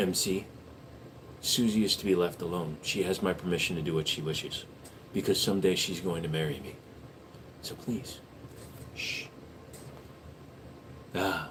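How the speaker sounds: soft, hushed ASMR whisper. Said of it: "A S M R for one whole minute".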